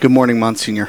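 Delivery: ordinary delivery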